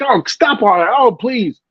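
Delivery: playful, jokey, dismissive put-on voice. Telling how they answer someone complaining, in a put-on jokey voice. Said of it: "in my jokey voice I say".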